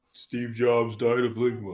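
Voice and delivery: put-on, fake deep voice with mock cadence. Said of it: "the cadence of his voice, like how deep it sounds".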